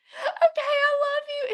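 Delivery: tearful, very high, sobbing crying voice. Retelling what she said while they held each other's arms: imitating her crying. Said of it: "she's just, like, crying".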